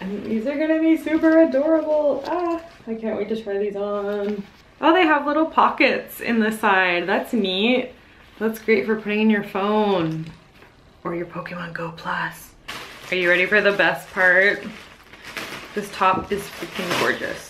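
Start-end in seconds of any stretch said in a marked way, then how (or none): 11.0-12.5 soft, hushed half-whisper, spoken as an aside. Showing off new pants with little side pockets, half-whispering.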